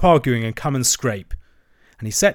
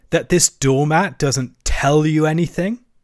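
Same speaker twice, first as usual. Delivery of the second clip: eager, excited, worked-up cry; 4 semitones higher than usual. The rat presses the mole about the doormat, excited. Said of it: "cried the excited rat".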